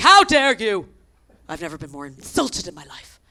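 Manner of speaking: mock fuming, affronted, loud indignant outrage. Retelling a phone call from a woman asked for her passport: imitating a fuming Kenty. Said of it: "she's fuming".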